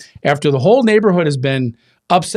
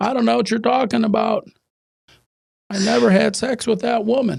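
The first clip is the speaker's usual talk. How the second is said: put-on rough, raspy, creaky voice, pitched up high; 7 semitones higher, 4 dB quieter than usual. Doing a quote as an impression: Bill Clinton impression. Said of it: "that's kind of my my Bill Clinton".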